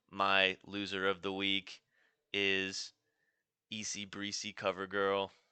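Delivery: mechanical, flat monotone robot voice. After praising another speaker's robot voice, showing off their own robot voice. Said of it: "here's my robot voice".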